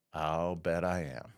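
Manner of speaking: flat deadpan, very low and slow. Retelling the wife's answer to being called married to a superhero: imitating wife's deadpan reply. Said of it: "her deadpan look that she's got".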